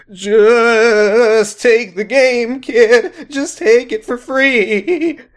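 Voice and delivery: nervous, very high, slow and drawn-out voice. The cashier answers a kid who asked about the game, in a nervous voice. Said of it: "The cashier said in a nervous voice".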